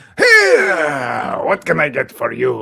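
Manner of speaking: icky, greasy salesman voice, swooping and creaky. Describing a show character, the speaker acts out his line: greasy car-salesman voice. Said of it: "genuinely was so hopeful that you would do his voice".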